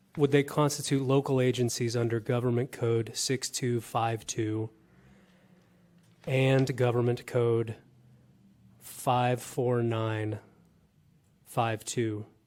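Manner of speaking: slow, unhurried speech. A member asking a question in a meeting, speaking slowly for Cheryl. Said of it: "I'm trying to speak slowly".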